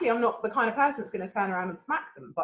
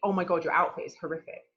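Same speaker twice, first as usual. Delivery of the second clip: ordinary talk, nothing marked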